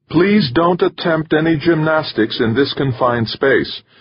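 high, bright female attendant voice calling out. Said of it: "called the female attendant".

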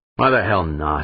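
grumbling. Dan, left at the table, answers Humphreys as he gets up: grumbling. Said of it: "Dan grumbled".

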